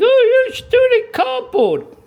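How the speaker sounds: very high, loud, shrill screaming screech. Imitating viewers who scream at the work: imitating viewers screaming. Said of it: "whilst you're sitting there screaming".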